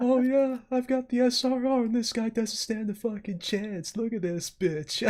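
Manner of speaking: put-on young, high voice.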